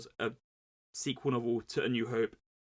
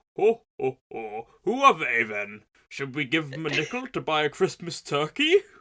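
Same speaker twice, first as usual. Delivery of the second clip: very loud, booming, swooping big bearded man voice; 4 semitones higher, 9 dB louder than usual. Podcaster imagines bigger podcast hosts reacting, voicing the guy from The Muppet Christmas Carol. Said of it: "what was with that weird like".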